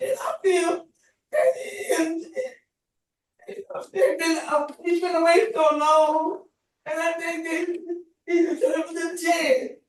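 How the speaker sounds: crying while speaking. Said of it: "I'm gonna stop crying".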